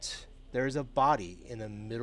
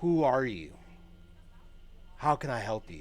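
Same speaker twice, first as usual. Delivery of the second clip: nervous delivery. A narrator voices a woman opening the door to strangers, nervous. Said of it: "opens it slowly and nervously".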